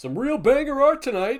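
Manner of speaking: put-on very high, very loud, shrill old-man shout. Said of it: "in my head sounded like an old man".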